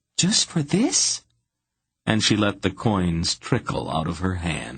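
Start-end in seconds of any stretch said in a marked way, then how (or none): 0.2-1.3 put-on very high-pitched, girlish little girl voice. Narrating Tsinedra asking her question with the coins, in a little girl voice. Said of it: "She asked in her most little girl voice".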